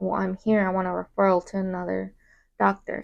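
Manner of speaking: ordinary talk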